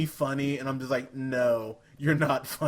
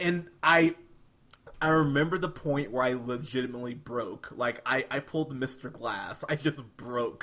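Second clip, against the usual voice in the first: usual speaking voice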